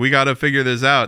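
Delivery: ordinary talk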